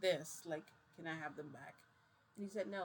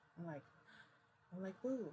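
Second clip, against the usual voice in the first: plain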